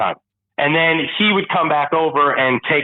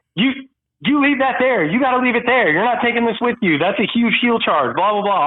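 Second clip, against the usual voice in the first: put-on yelling, higher; 9 semitones higher than usual. Retelling what the dispatcher said on the phone: imitating someone yelling. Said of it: "Chris is yelling at me like".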